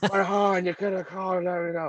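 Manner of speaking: mumbled put-on gruff voice. Imitating Leia in episode seven speaking to Han: Carrie Fisher speaking out the corner of her mouth. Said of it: "out the corner of her mouth".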